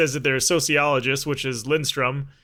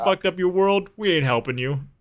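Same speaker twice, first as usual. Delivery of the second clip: mock condescending, snarky sarcasm; 4 semitones higher than usual. Player retelling a game character's line, mimicking a snarky tone. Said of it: "so snarky and so just like sarcastic and condescending".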